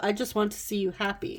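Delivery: ordinary delivery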